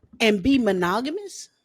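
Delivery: ordinary delivery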